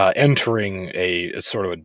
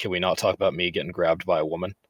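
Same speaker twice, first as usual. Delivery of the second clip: normal talking voice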